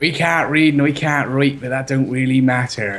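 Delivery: put-on slow West Country farmer accent, Somerset. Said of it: "Can you do a country folk accent?".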